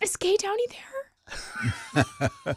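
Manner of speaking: put-on very high, very slow, polite grown-up voice. Retelling calling a parent at work as a child: imitating own childhood phone call. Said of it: "I tried to act like I wasn't a child".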